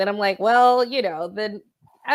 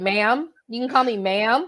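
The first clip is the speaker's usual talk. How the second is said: very firm and decisive; 3 semitones higher than usual. Acting out a reply to a cashier who says ma'am: very firm. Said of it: "Make it a very firm".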